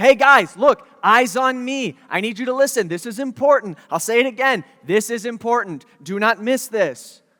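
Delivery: insistent, emphatic, fatherly, leaning on every line. Acting out a father urging his teenage sons to listen: imitating an emphatic father. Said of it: "why is he being so emphatic".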